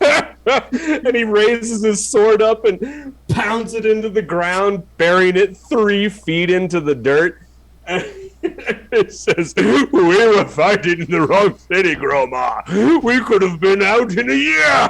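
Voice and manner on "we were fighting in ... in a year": giggly half-giant voice laughing through words. The narrator voices a half giant who can't stop laughing: giggling half-giant voice. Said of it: "it's like half giant giggle fits".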